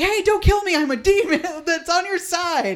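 high, loud shout. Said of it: "shouting loudly".

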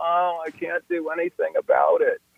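mock self-pitying whine, high and drawn out. Flight canceled, acting out the inner victim's mock-whiny voice. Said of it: "That kind of whiny voice".

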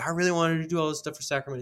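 put-on crestfallen lament. Retell what he said about Sacramento and how he sounded, imitating someone heartbroken. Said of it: "It just sounded like he had his heart broken".

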